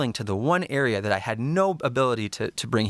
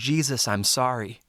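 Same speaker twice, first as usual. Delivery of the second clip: put-on tearful, sobbing crying out. Recounting sobbing after a prayer, retelling the tearful crying out. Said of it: "I keep crying out".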